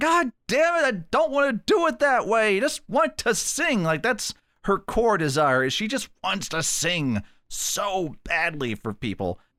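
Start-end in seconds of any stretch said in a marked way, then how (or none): 0.0-3.8 acted, very high screaming through tearful sobs. Retelling a film scene where a character runs out: imitating someone screaming and crying. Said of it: "screaming and crying".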